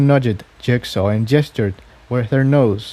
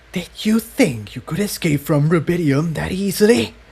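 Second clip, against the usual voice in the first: rough, harsh, raspy, menacing, high-edged hiss; 5 semitones higher than usual. Reading a story aloud, a stranger confronts someone in a harsh, raspy voice. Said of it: "his voice was harsh and raspy".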